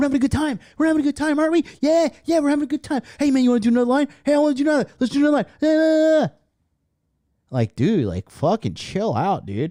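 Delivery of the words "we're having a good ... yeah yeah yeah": very high, wired, looping, rambling babble. Mocking another speaker's behavior: imitating someone coked out of their mind. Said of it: "like, coked out of their mind".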